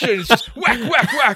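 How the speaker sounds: loud, high-pitched whacking sound effects.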